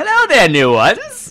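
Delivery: wrinkly gnome character voice. Voicing a wrinkly gnome at a desk greeting the newcomers: wrinkly gnome voice. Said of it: "that's my semi voice".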